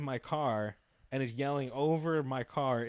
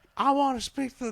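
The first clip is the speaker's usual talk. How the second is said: mock scream, higher and louder; 11 semitones higher, 6 dB louder than usual. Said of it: "He's screaming and stuff".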